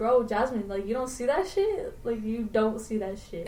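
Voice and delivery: ordinary talk, nothing marked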